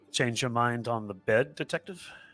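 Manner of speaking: put-on European accent. Retelling a woman's words to a detective, in a European accent. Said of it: "in a European accent, she says".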